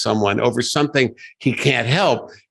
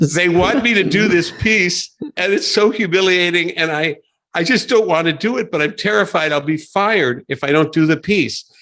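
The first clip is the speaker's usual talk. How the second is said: high, mock tearful pleading tone, pushed through tears; 6 semitones higher than usual. Retelling Chris Farley answering David through his tears: imitating Chris Farley crying. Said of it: "Farley through his tears is saying".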